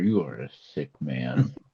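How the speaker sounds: soft, hushed half-whisper. Half-whispering to the news reporter in character: half-whispering in character. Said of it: "just whisper".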